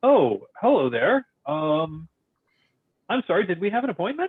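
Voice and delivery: a little shocked. Narrator voices a sculptor turning around on his stool: a little shocked. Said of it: "is a little shocked".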